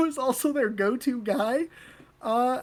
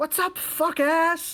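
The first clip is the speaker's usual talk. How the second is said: mock casual yell, stretched out, pitch slightly lifted; 6 semitones higher than usual. Retelling yelling out a rolled-down car window while driving by: retelling a yell. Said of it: "and I yelled at Z-Dog".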